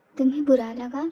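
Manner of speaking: plain reading voice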